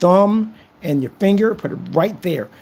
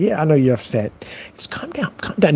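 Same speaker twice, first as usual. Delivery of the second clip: normal talking voice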